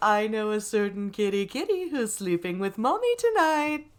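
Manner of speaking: sugary, sing-song cartoon mom voice. After praising a co-host's South Park voice, showing off their own: Eric Cartman's mom voice. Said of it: "I also do Eric Cartman's mommy voice".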